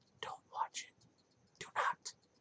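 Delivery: hushed whisper spoken right at the ear. Warning listeners off a movie remake: whispering into the ear. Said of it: "right up to your ear and whispering".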